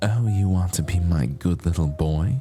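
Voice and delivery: put-on motherly ASMR voice. Joking to listeners about the idea of mommy asmr: mommy asmr voice. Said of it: "Mommy A S M R".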